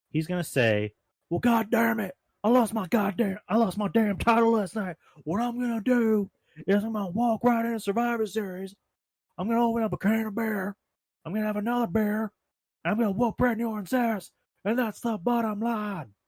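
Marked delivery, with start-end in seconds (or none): 1.2-16.0 very high-pitched, intense wrestler-style voice. Imitating a wrestler answering about losing the title: Steve Austin impression. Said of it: "that was my impression".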